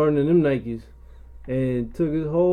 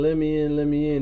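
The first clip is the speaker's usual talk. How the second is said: normal talking voice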